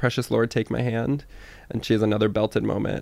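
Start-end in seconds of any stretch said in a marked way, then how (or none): none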